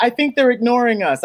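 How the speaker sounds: plain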